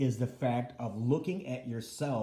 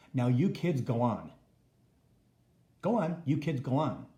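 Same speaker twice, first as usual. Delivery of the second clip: dismissive, brushing-off, shooing tone; 4 dB louder than usual. Retelling what mother said after surgery, imitating mother's dismissive tone. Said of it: "in her tone of voice".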